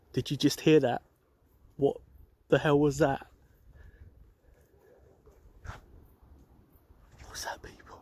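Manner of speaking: frightened, spooked, alarmed. Hearing a sudden noise while walking alone in a graveyard: scared. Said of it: "I'm really getting scared".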